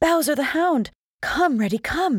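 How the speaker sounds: very high cry of great fright. Narrator reads an old fox urging the young fox to flee, crying out in fright. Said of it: "she cried".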